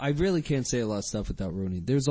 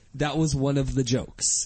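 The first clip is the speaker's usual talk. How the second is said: ordinary talk, nothing marked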